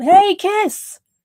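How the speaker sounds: high, loud shouting.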